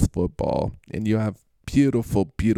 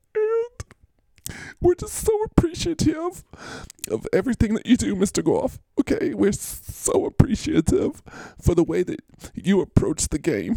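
exaggerated, very high, swooping fake sobbing; 13 semitones higher than usual. Speaker thanks mr. goff after saying he is starting to cry, mock crying. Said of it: "I'm starting to cry".

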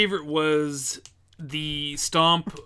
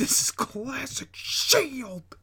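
very high, slow, drawn-out, overexcited calling; 10 semitones higher than usual. Repeating the call, Michael Cole aneurysm voice. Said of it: "Michael Cole aneurysm voice".

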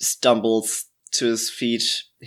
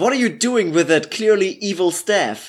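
sudden, fast, high-pitched shouted outburst; 8 semitones higher than usual. Narrator voicing a character who wakes up and shouts at another, shouting. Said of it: "he shouts".

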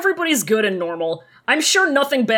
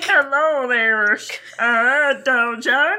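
put-on cartoon duck voice. Imitating a character's funny voice that another speaker asked about: Donald Duck voice. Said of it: "Donald Duck voice".

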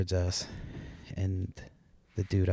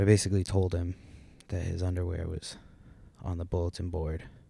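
ordinary talk, nothing marked

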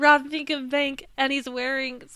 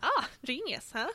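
sounding pleased, flattered; 7 dB quieter than usual. Retelling a cartoon scene, imitating flattered Squidward. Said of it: "Squidward is so flattered".

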